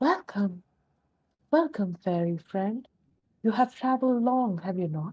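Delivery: warm, gracious, welcoming host character voice. Voicing Nirvana greeting a traveler: Nirvana character voice. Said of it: "somebody who gets up and says".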